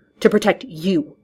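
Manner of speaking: forced out through clenched, gritted teeth. Narrator reading one character's last words to another, through gritted teeth. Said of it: "He said that last through gritted teeth".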